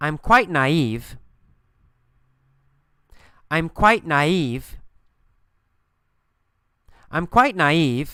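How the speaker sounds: slow phrase with clear, deliberate pauses. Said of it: "this time with pauses after the key phrases".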